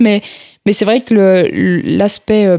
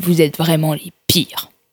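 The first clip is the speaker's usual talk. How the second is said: put-on disdainful, scornful tone, lower pitch; 3 semitones lower, 5 dB quieter than usual. Retelling what a person they had to take to the station said, mimicking a disdainful remark. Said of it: "qui nous a regardé avec dédain".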